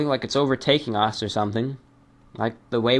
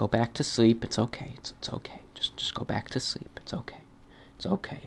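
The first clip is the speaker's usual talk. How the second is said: soft, hushed, lulling soothing whisper; 8 dB quieter than usual. Apologizing to listeners using the recording as a sleep aid, quiet soothing voice. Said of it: "Let the quiet quiet voice lull you back to sleep".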